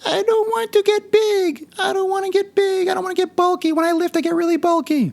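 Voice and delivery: very high, put-on female voice. Fitness coach mimicking women told to lift heavy weights, imitating a woman's voice. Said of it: "I'm going to do my best female impression".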